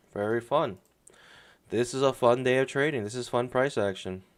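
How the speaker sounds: heavy sarcasm, mock praise, meaning the opposite. Commenting on choppy, sideways trading price action: sarcastic. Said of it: "Super sarcastic".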